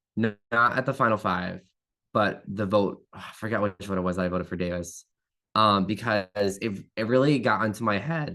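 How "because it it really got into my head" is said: voice breaking and cracking mid-phrase. Explaining why he voted for Davis in the game, voice cracking. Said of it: "Oh my God, voice crack".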